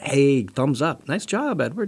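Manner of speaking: slow, soft, relaxed cool-guy drawl. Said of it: "you sounded a little like the Fonz there".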